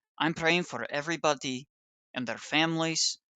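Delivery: put-on heavy, soft Russian accent, laid on thick. Quoting a woman praying during the liturgy: thick Russian accent. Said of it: "with her thick Russian accent".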